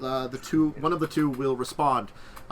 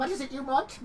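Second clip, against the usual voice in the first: bad put-on woman voice, very high, soft; 12 semitones higher, 5 dB quieter than usual. Voicing a game NPC, the speaker does a very bad woman voice. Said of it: "woman voice".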